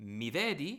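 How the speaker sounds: pitch rises at the end of vedi. Teaching how italian asks a question, rising pitch at end of vedi. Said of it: "to ask a question, we just use a rising intonation".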